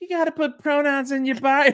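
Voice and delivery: very high-pitched, caricatured put-on stock voice. Imitating someone who talks about their pronouns: imitating people who talk about pronouns. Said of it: "we all use the same voice".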